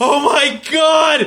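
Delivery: acted crying breakdown. Retelling an animated clip where characters break down crying: imitating characters crying. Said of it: "they just break down crying".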